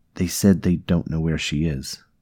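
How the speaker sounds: plain reading voice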